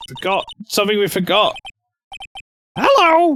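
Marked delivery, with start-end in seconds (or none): 2.8-3.4 put-on parrot character voice. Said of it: "the voice for this bird is Marge Simpson".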